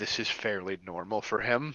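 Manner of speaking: muttering under breath. A character remarks about a man during a game scene, muttering under her breath. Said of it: "you hear Lyra mutter under her breath".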